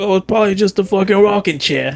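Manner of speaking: slight put-on Jersey accent. Speaker retelling what a man said, giving him a little jersey accent. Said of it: "So I gave him the little accent too".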